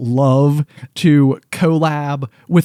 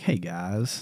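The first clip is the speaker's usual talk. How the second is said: very soft, hushed, barely above a murmur; 7 semitones lower, 14 dB quieter than usual. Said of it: "Solid impression".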